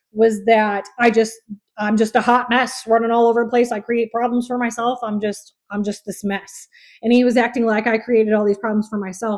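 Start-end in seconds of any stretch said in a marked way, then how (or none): none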